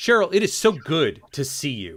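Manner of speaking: furious dead-serious tone. Demonstrating with a partner named cheryl, greeting her in an angry tone. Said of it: "in a very angry, very negative, very serious tone".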